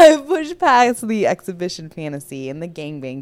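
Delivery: loud laughing run, laughing through the words.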